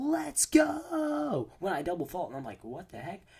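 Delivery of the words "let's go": very high thrilled shriek, long stretched go. Speaker recounts a kid yelling when she double faulted, retelling a kid's scream. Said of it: "he screams".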